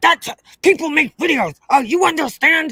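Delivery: scolding, yell-like, high, mild yell. Retelling how a mother yelled at her son in the car, imitating her yelling. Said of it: "she yelled at him and was like".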